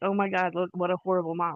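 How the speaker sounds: usual speaking voice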